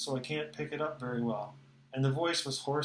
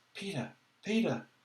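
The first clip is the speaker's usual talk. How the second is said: restrained, held-in calling, high; 4 semitones higher than usual. Narrator searching along a stream for a missing person, calls his name in a hushed voice. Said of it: "to say his name in a hushed voice".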